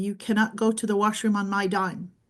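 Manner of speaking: usual speaking voice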